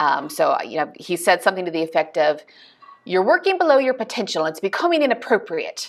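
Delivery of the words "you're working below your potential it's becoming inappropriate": bad put-on British accent, pitched higher. Quoting a man who lives in london: bad british accent. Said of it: "I have a terrible British accent".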